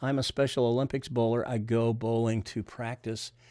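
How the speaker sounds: usual speaking voice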